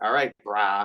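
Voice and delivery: put-on, sarcastic, mocking tone on brah. Showing how the word brah gets said to make fun of it: mocking sarcastic "brah". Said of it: "it's in a sarcastic".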